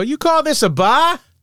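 very high, lingering, drawn-out cartoon voice drawl. Retelling hearing a voice come around his office corner, imitating the actor's voice. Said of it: "like him".

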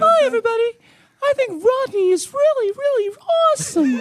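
very high, squeaky cartoon voice. As a game penalty, praising Rodney for one minute in a Mickey Mouse voice. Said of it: "in a Mickey voice. Talk about how awesome Rodney is".

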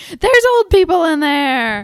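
shrill, full-throated, very loud, high scream. Recalling how the listener yelled at a car that sped past: retelling a scream. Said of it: "you screamed at that car".

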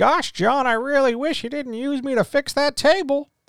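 very high, goofy, silly cartoon voice. Imagining a book suddenly talking back to him, goofy voice. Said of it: "telling me in a goofy voice".

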